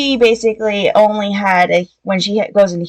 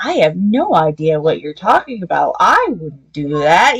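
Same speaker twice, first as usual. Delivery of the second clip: mock, put-on sarcastic tone; 3 semitones lower than usual. Retelling a book character's denial to an angry friend: imitating a sarcastic denial. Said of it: "the whole sarcastic".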